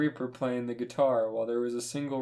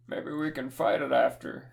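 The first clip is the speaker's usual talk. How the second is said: put-on old man voice. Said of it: "He's gonna sound like an old man".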